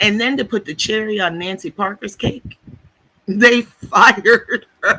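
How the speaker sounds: speaking while breaking into laughter through words. Speaker telling a story to a listener, laughing while talking. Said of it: "I'm sorry, I'm laughing".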